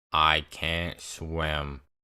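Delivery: dead-level, low, flat monotone, no inflection. Retelling how Ben answered while the speaker fought for life, imitating Ben's flat monotone. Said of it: "in the most monotone voice".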